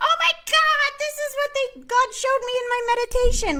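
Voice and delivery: very high, squeaky, grating, annoying tone. Retelling how she tells people about her meditation visions, squeaky and annoying voice. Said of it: "my voice goes all squeaky and annoying".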